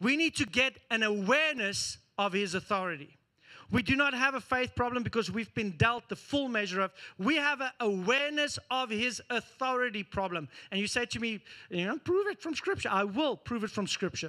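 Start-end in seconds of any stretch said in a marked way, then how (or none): 12.0-12.9 grating, irritating, pitched-up put-on voice. Speaker voicing an imagined listener's challenge, mock annoying person voice. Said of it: "That's my annoying person voice".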